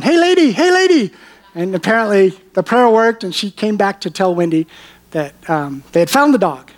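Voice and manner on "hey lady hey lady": very high-pitched, far-carrying calling shout. Retelling a neighbor driving back up to call out: imitating someone yelling.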